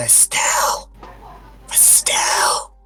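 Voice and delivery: hushed, whispered calling out. A player's character wanders the halls calling a name, whispering. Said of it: "I'm whispering".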